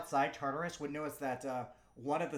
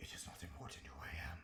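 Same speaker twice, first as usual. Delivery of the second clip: demonic voice, much lower, quieter; 9 semitones lower, 13 dB quieter than usual. Asked who it is by someone offering sacrifices, the being answers in a demonic voice. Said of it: "You hear this demonic sounding voice".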